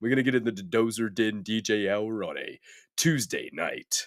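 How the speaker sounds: very deep voice. Speaker, sick, announcing a Tuesday night DJ hour to chat, very deep voice. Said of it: "It's so fucking deep right now".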